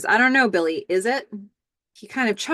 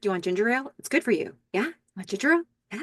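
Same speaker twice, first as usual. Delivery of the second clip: put-on, fast, keen, eager puppy-dog enthusiasm; 4 dB quieter than usual. Retelling what one person eagerly said to another, mock-enthusiastic offer. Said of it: "with enthusiasm".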